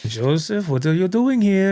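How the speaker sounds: put-on German accent. Retelling what a friend's unhappy mom said to them, Mrs. Groves in bad German accent. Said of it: "his attempt at a German accent".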